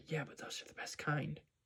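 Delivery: put-on whispering. Retelling a scene where a late student replies to the teacher, retelling a whisper. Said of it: "he intentionally whispers".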